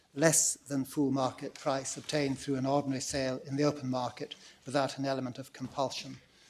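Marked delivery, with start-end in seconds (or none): none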